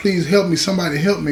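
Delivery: put-on tearful crying, begging tone. Retelling a shot man's words, imitating a crying plea for help. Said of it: "he's bleeding and he's crying and he's like".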